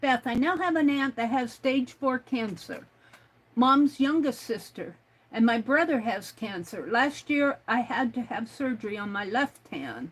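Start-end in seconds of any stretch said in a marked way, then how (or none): none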